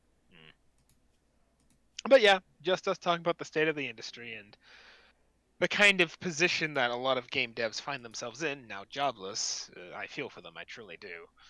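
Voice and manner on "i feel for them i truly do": soft, half-hearted sympathetic tone. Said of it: "I felt like I said that half-heartedly".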